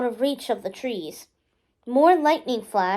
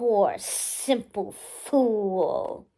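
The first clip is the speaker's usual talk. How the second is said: dark, threatening, menacing voice, ringing and echoing; 3 semitones lower, 4 dB quieter than usual. Narrating a raven diving at a fleeing cyclist, in a menacing echoing voice. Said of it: "a familiar, menacing voice echoing out of its beak".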